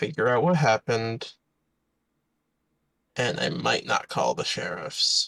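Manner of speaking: hushed whisper. A character speaks privately to the player, whispered. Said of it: "He whispers to you".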